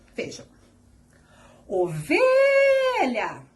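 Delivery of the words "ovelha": "ovelha" called out, stressed, stretched "ve". Portuguese lesson on finding the stressed syllable, calling out with ve held long. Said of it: "como se estivessem chamando ela... o V foi o que eu falei de maneira mais prolongada".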